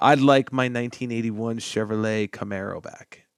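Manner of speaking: plain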